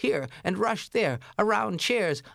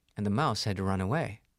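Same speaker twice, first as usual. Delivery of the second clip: ordinary delivery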